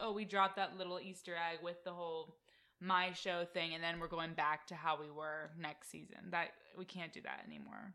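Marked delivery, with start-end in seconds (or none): none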